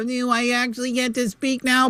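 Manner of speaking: high, whiny, passive-aggressive, put-upon whinge. After muting Rob, the speaker imitates their mom, mock-whiny and passive-aggressive.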